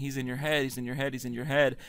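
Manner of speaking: ordinary talk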